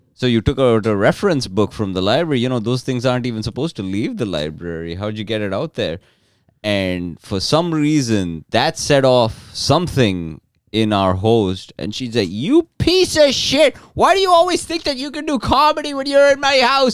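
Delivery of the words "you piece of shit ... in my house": very high, shrill, furious screaming tirade. Retelling what the host yelled at him in her house, imitating a yell. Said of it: "And yelling in front".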